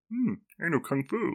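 high frog puppet voice. Retelling a joke with a roommate, quoting Neo's line: Kermit the Frog voice. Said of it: "we said Kermit would be, um, Neo".

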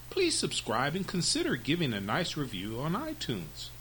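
ordinary delivery

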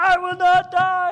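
shrill, drawn-out, very high, very loud scream. Recalling defying the devil while jumping up and down: retelling a top-of-lungs scream. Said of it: "I'm just screaming at the top of my lungs".

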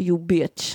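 fake Polish-accented English. Retelling what a man said while walking past, in broken Polish-accented English. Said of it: "på typ så här bruten engelska, polska".

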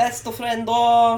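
slight put-on Italian accent. Podcast host jokes about a coworker guest, slipping into a slight put-on accent. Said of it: "Were you trying to do an accent just then?".

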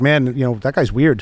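ordinary talk, nothing marked

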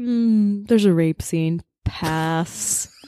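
slow, deliberate, dragged-out dismissive brush-off. Imagining an actor turning down a role: Nicolas Cage impression. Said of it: "Was that a Nicolas Cage impression?".

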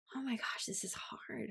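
mutter under breath. Recalling sorting through everything, retelling an under-breath mutter. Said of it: "under my breath".

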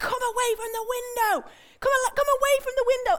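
high-pitched shouting. Retelling sitting on a bench in a moving pod with her kids, re-enacting her shouting. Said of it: "I'm shouting".

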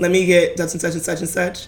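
normal talking voice

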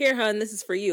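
loud, high screaming call. Retelling how a man brought a seatbelt extender down the aisle, imitating him screaming. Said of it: "like screaming down the aisle".

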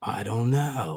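acted earnest, honest, sincere tone after a pause. Retelling how he answered when asked why, imitating a sincere reply. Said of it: "he pauses very sincerely".

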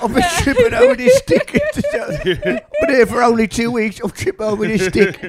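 high, loud, laughing mock complaint.

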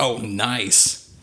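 put-on sarcastic reply tone. Speaker retells her reaction on seeing the tip, imitating a sarcastic remark.

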